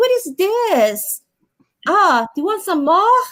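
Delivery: put-on high Brazilian accent, stretching the word "this". Recalling how she used to talk: imitating her old brazilian accent. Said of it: "I miss when I used to have a Brazilian accent".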